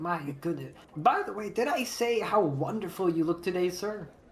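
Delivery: gushing, charmed, incredibly friendly tone. Voicing a charmed character complimenting a player: charmed, incredibly friendly. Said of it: "he's incredibly friendly to you".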